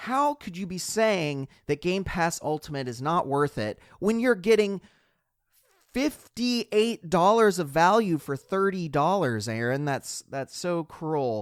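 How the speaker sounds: sarcastic, tongue-in-cheek. Teasing the other speaker over a subscription's value: sarcastic. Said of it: "of course, uh, being sarcastic here".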